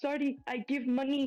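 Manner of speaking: frightened, terrified voice. Voicing the kebab seller in the story after you deck a man: terrified kebab seller. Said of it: "he's terrified and he like holds up his hands".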